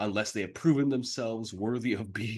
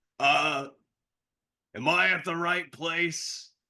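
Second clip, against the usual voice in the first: put-on voice, louder and higher; 6 semitones higher, 3 dB louder than usual. After a loud knock at the door, the narrator voices Mono's loud voice. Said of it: "the loud voice of Mono".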